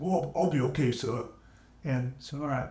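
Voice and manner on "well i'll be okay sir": put-on heavy, broad Boston accent. Retelling what a man with a hurt leg said to him, thick boston accent. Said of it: "he had this real thick Boston accent".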